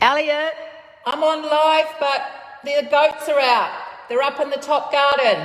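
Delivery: shrill, very high-pitched, loud yell. Warning that goats are out in the garden, yelling out the door. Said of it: "I'm gonna be yelling in a second".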